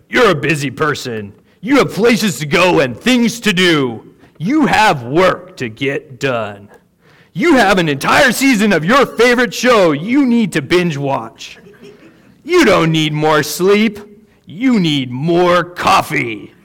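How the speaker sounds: raspy, big, rough-edged commercial announcer voice. Retelling what an announcer said, in a raspy announcer voice. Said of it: "I'll try to do my best raspy, like announcer voice".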